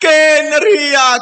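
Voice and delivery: hyped-up cheering, punching every word.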